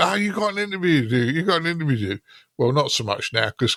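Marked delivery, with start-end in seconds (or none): 0.0-2.2 high-pitched screaming, said twice over. Retelling how colleagues hurry the speaker at the Ham Fest: imitating someone screaming. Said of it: "they're screaming at me".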